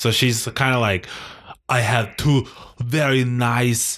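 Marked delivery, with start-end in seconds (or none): 1.7-4.0 very slow, heavy-handed, put-on Russian accent. Imitating how a Russian woman might talk: imitating a Russian woman. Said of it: "that's too, uh, uh, Arnold Schwarzenegger".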